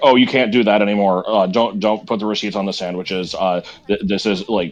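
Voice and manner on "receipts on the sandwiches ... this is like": normal talking voice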